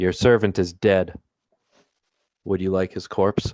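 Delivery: calling out very quietly. Player's character calls into a room, unsure how it will respond, very quietly. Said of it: "I'll call out into the room just very quietly".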